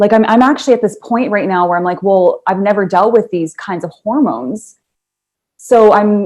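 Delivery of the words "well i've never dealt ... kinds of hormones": ordinary delivery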